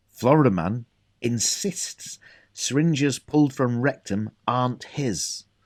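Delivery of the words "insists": strong emphasis on the word insists. Reading out headline number seven; stress on insists. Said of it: "like the stress on the word insists".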